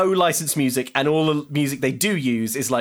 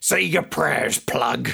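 rough, creaky, raspy voice like a heavy smoker. Retelling a film scene where Cyclone taunts Thunderjam: imitating Cyclone's smoker voice. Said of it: "it sounds like Cyclone smokes four packs a day".

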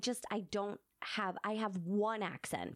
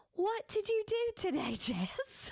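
very high-pitched attempted Australian accent; 13 semitones higher than usual. Asked to try the accent in normal conversation, the speaker attempts it: attempted Australian accent. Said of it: "Could you be like".

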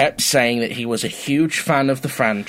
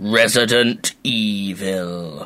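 dramatic trailer announcer voice, evil drawn out; 3 semitones lower than usual. Asked to do a game title call: booming announcer voice. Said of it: "Can you do the Resident Evil boom?".

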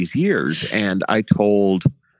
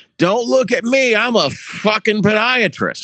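very high, loud, blaring, tipsy holler; 13 semitones higher than usual. Retelling how Pat answered a call for a doctor, imitating Pat's loud shout. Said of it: "loud as fuck".

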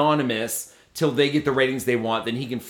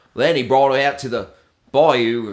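put-on, mock Australian accent; 5 dB louder than usual. Recalling true crime podcasts she listened to, imitating an Australian accent. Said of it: "because of the accent".

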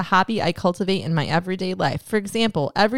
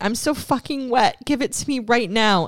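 put-on scream, higher; 4 semitones higher than usual. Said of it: "she kept screaming at me".

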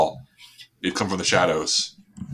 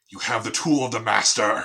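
mysterious disembodied voice; 3 semitones higher than usual. Narrating to players, voicing the voice first heard in the tunnel. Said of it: "and it says".

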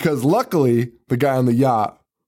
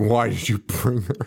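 put-on voice of an angry man, mad outburst; 3 semitones lower, 3 dB quieter than usual. Retelling a movie scene, quoting the chaperone: imitating an angry man. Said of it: "He's pissed. He's so mad".

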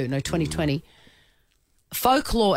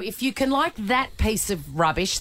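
ordinary talk

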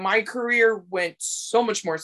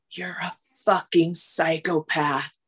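soft whispering; 3 semitones lower than usual. Retelling what a producer said off camera: imitating a quiet whisper. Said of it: "just so quietly whispered in my ear".

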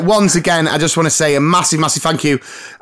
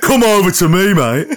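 put-on Cockney accent; 2 semitones higher than usual. Doing an impression of the co-host: impression of Cockney John. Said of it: "I can't do the impression of you".

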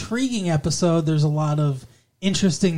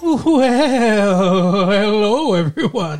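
loud, high talking-horse voice, "well" stretched out; 5 semitones higher, 6 dB louder than usual. Greeting everyone at the start of the show: Mister Ed voice. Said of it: "it's my Mister Ed".

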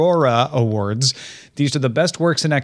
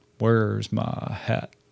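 put-on cowboy accent; 3 semitones lower, 6 dB quieter than usual. Telling a cowboy joke, delivering the punchline in a cowboy accent. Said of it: "so he says it like that".

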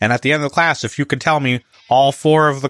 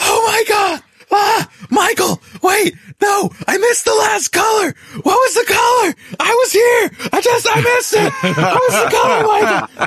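shrill, very high-pitched acted-out screaming. Retelling how a class member unmuted his mic: imitating someone screaming. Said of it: "starts screaming".

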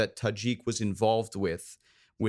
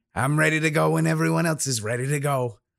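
gruff voice, pushed out and pitched high; 5 semitones higher, 4 dB louder than usual. The demolitions expert tells everybody he is ready to go; gruff Widget voice. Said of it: "real gruff, kind of voice to him".

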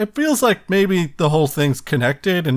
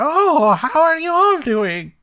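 high-pitched put-on old woman voice; 13 semitones higher than usual. Quoting Chicken Lady's line in her voice: Chicken Lady old lady voice. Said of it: "Which is [name] doing an old lady voice".

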